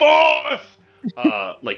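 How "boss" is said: very high, shrill, piercing scream. Voicing a man who sees his boss killed: screaming. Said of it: "screams out as".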